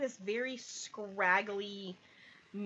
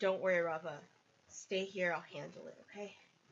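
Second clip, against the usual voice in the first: in a whisper; 3 semitones lower, 3 dB quieter than usual. Voicing a character who comforts Rava from behind: whispering.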